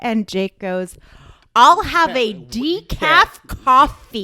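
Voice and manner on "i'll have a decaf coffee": booming, very loud, very slow, drawn-out voice. Retelling how Jake repeated an order to a waitress: imitating Jake ordering loud and slow. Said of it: "Very, like, loud and slow".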